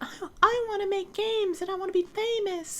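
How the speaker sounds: very high, squeaky cartoon voice. Imitating people who want to make games and be famous, Mickey Mouse voice. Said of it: "I always do the Mickey Mouse voice when I do that".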